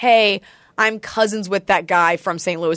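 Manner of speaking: ordinary delivery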